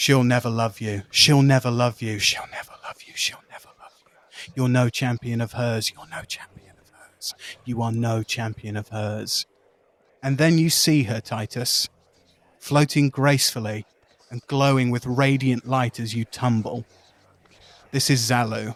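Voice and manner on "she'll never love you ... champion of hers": echoing, repeated, taunting voices. Narrator voicing Titus's clan members as he tumbles through darkness, echoey voices. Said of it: "in echoey voices say".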